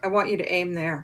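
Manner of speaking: whispered voice. Retelling what the guide said close to the target: imitating a whisper. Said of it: "he whispers into my ear".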